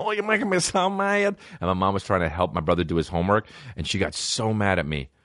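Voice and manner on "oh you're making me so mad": put-on high, squeaky, funny little kid voice. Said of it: "I kept saying".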